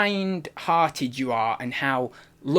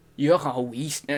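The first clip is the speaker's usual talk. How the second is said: put-on accent drifting into French. Admitting to being atrocious at accents and trying one out; accent drifting into french. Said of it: "it's going French now".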